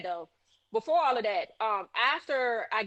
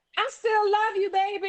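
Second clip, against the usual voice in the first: put-on high-pitched screaming yell; 9 semitones higher than usual. Retelling what the boyfriend on the ground screamed: imitating someone screaming. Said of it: "this fool on the ground screams".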